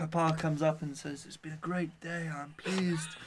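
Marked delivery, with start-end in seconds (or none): 1.3-2.3 soft, bad, cheesy Italian American mobster voice. Telling a wedding story, the speaker voices the old Italian papa: bad Godfather impression. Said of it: "That's such a terrible Godfather impression".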